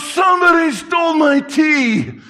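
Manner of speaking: put-on very high, very slow, drawn-out drunken holler. Retelling a drunk man at the door yelling, imitating a drunk man yelling. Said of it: "Flat out drunk".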